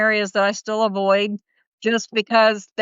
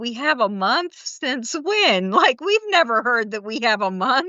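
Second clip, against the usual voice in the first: stunned, shocked, disbelieving tone; 3 semitones higher than usual. Retelling how Jesse reacted on hearing about the month: imitating Jesse, shocked. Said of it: "Even Jesse was shocked".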